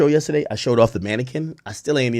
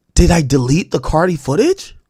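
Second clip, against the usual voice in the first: mock sudden alarm, high, loud and panicked; 5 semitones higher, 6 dB louder than usual. Retelling searching for lost footage after clearing memory cards: retelling own past panic. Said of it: "So I'm panicking for a second".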